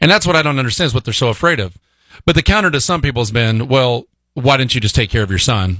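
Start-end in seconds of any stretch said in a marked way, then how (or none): none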